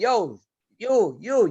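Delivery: acted-out loud hollering call-out. Retelling yelling at talking kids during practice: imitating own screaming. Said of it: "I'm screaming".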